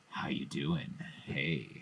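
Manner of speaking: very slow, drawn-out, smoky, creepy, disarming voice. Describing a film killer's phone voice: Ghostface voice. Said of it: "You're gonna, like, absolutely enchant our listeners".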